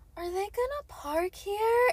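put-on high, drawn-out girl's voice, pitched way up. Retelling what a girl asked through the car window: imitating the girl's exact voice. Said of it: "In that exact voice".

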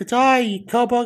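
put-on Australian accent. Game host tells a player to answer in an Australian accent, then greets them: Australian accent. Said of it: "in an Australian accent".

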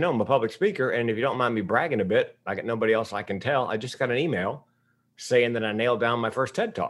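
ordinary talk, nothing marked

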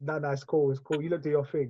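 soft, easygoing, dismissive tone. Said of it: "Man said".

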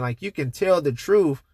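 plain

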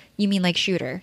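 mock straight-faced delivery. Retelling a girl's reply to being told to be a warrior, mock-deadpan. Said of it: "deadpan with a straight face".

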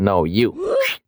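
ordinary talk

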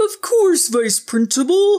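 very high, put-on purple dinosaur voice. Answering the vice principal who gave him lunch detention: purple dinosaur voice. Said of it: "Jordan said in his purple dinosaur voice".

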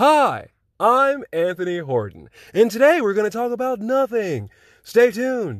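high, loud newscaster voice. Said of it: "I got a newscaster voice".

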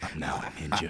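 put-on low ninja voice. Retelling a six-year-old son playing ninja: imitating a sly low ninja voice. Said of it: "ninja voice".

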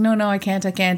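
ordinary talk, nothing marked

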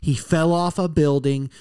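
ordinary delivery

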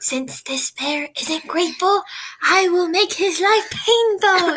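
slow, deliberate, high-pitched stage whisper. Narrator reads the fairy's words as she casts a spell; [name] half-whispering. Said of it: "she whispered as she cast a spell".

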